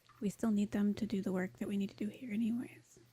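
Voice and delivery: soft whispering. In a tabletop role-play, a character whispers back to another character. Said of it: "she'll try to quietly whisper back to him".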